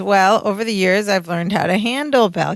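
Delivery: plain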